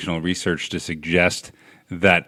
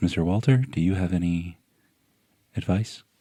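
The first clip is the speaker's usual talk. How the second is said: calm, gentle, soft, lulling soothing voice; 5 dB quieter than usual. Asking the other speaker for advice, in a really soothing voice. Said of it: "I'm going to start talking in a really soothing voice".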